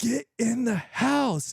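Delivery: very high, furious, full-volume angry yell. Recalling yelling at their kids in a dream, retelling a full-volume yell. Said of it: "at full volume, I'm like yelling at my kids".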